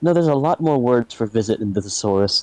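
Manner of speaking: grumbling, muttered aside to oneself. Playing a character grumbling at a guide: muttering under breath. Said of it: "I just sort of mutter under my breath".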